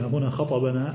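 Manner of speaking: normal talking voice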